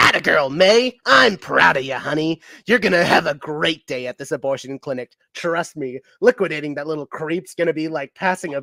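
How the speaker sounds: little shoulder devil character voice. Voicing the little devil talking to May, in a little devil voice. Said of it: "the little devil says".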